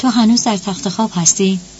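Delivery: plain reading voice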